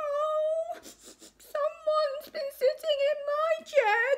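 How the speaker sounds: very high, slow sobbing wail, "oh" drawn out. Narrator reading Baby Bear's line in the Three Bears story, crying out. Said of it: "cried Baby Bear".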